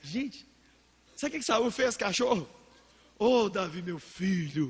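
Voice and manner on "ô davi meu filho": very slow, honeyed, syrupy coaxing sweet-talk. Retelling how Saul answered David after being spared: imitating Saul's sweet talk. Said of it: "Satanás com conversinha mole".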